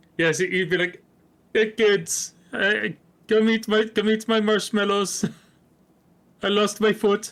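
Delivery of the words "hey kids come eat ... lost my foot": high-pitched voice like a cartoon lemur. Voicing a cereal mascot lemur after being asked: King Julian voice. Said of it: "would he sound like King Julian?".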